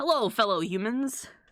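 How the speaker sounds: monster voice put on as fake-casual and friendly. Joking about being a demon lord in human disguise, greeting people: demon lord posing as a normal guy. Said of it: "I'm in my human disguise going".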